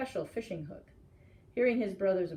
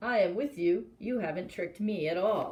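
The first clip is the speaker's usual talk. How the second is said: strange, odd voice through laughter. Reading a story where Maui speaks hidden from his brothers: strange laughing voice. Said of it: "laughing and saying in a strange voice".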